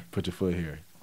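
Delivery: monotone voice. Giving an example of monotone talk between partners: monotone voice. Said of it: "monotone, for those, here's an example of that".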